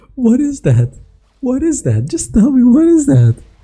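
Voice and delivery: talking through laughter. Reviewing a fight replay, reacting to the damage: laughing while talking. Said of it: "I'm sorry that I'm just laughing".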